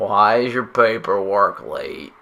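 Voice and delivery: slow, fake, put-on American southern drawl. Voicing someone asking about late paperwork: put-on southern accent. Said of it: "Why'd you turn her into a southern person?".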